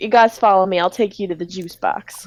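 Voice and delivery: put-on Southern accent with a drawl. Voicing a grocery store worker leading the players: southern accent. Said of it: "everyone in this grocery store have a southern accent".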